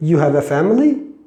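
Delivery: statement tune rising upward on family. Teaching English, a plain sentence made a question by tone: statement said as a question. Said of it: "normal düz cümle ama ses tonuyla soru yapılabiliyor".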